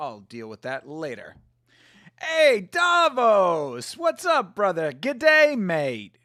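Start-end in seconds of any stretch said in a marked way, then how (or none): 2.2-6.0 fake, put-on Australian accent. Greeting someone in Australia on a call: put-on Australian accent. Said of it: "You like that I've been working on my accent?".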